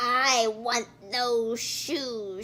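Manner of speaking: wicked witch voice hissing, very slow and drawn-out. Reading a children's story aloud, voicing the witch, hissing. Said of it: "she hissed".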